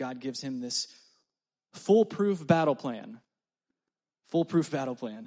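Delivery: ironic, sarcastic, mocking tone. Describing the battle plan God gave Joshua, in a sarcastic tone. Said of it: "pick up on some sarcasm here".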